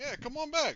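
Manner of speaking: loud, high-pitched shouting.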